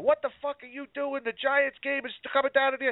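play-acted very high, shrill, enraged furious screaming. Retelling a man at a food court screaming at an employee changing the TVs, retelling a guy screaming angrily. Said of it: "this guy starts screaming at her".

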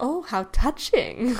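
acted out snide, high, snarky sarcastic tone. Discussing Harry Potter, acting out Voldemort's line, sarcastic Voldemort imitation. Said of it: "He's always so, like, sarcastic".

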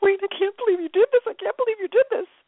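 put-on, very high, tearful crying through the words. Retelling calling wayne after he sent a check, imitating own crying. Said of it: "and I was crying".

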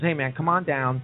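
plain

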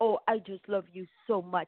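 put-on sugary baby talk, as to an infant. Imitating a mother talking across the table to her high-school daughter: imitating baby talk. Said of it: "like she's a baby".

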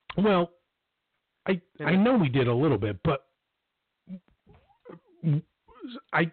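halting, stammering, stumbling over words. Caught off guard by the other speaker's objection, stammering. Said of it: "now I'm stammering".

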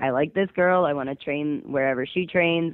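ordinary talk, nothing marked

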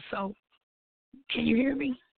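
failing voice, nearly gone. A caller to a call-in reading show asks if she's heard, voice gone. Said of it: "but my voice is gone".

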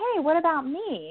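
very high, playful, slow, drawn-out, acted joking tone. At a couple's lunch, after he praised the girlfriend, retelling a joking remark to him. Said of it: "I jokingly looked at him and said".

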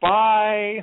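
acted, high, drawn-out, uncomfortable and embarrassed tone. Retelling a TV scene of a daughter leaving her parents: imitating Emma's embarrassed bye. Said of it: "she's so clearly uncomfortable".

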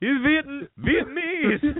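put-on very high-pitched elderly grandmother voice.

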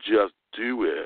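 put-on American southern US accent. Retelling a man on stage who said it in a Southern accent: imitating his Southern accent. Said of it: "it was Southern accent. I love the way he said it, and I probably can't do a very good job, but he goes".

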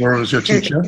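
said with real power and force.

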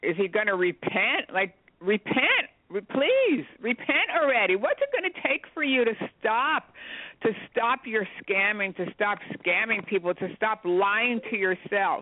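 high-pitched shouting and screaming. Retelling watching him on television, retelling screaming at the TV. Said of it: "I'm screaming at the television".

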